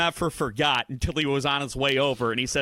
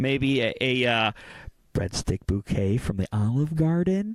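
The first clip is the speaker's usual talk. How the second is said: playful mock whisper; 2 semitones lower than usual. Listing small Valentine's gifts, in case she's listening: joking whisper. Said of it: "I'm gonna have to whisper this in".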